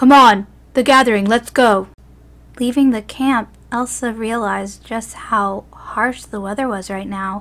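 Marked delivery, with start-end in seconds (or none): 0.0-1.9 full-out, very loud shouting yell. He yells to her after jumping off the rock: yelled. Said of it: "he yelled".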